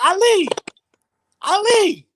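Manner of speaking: loud, high yelling.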